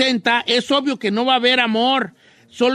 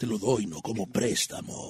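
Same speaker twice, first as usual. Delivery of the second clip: whispered, hushed, airy, breathy male voice; 12 dB quieter than usual. Acting out how the guy might answer a request for money: imitating the guy's voice. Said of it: "I like the voice".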